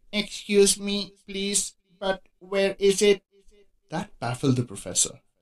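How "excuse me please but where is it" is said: hesitant, slow, halting, pitched-up unsure voice. Reading a story, the narrator voices a Martian speaking to a professor, hesitant. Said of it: "the Martian stood up and said hesitantly".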